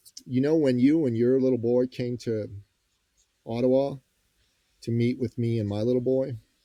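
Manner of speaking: plain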